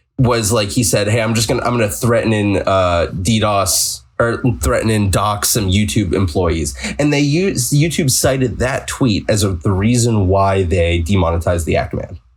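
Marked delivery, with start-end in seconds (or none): none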